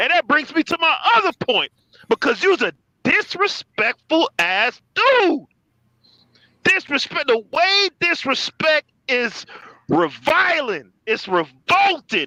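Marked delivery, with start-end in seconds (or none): 2.1-12.3 furious, angry, incensed, higher. Arguing against another speaker's take on an MVP: angry, incensed. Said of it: "I'm incensed over here".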